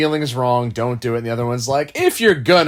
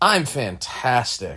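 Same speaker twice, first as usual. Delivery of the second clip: sarcastic tone. Answering a question about how the day is going: sarcastic. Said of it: "A little bit of sarcasm there".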